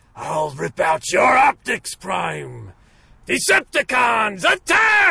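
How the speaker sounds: loud, high, swooping robot villain shout. Showing how the character used to talk; Megatron voice. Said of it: "Get me into the character... I found it!".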